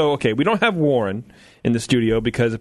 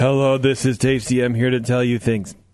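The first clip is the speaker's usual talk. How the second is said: fake, flat monotone at lower pitch; 3 semitones lower than usual. Told his audio sounds terrible, a speaker introduces himself in a fake monotone. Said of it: "i will just talk in a monotone".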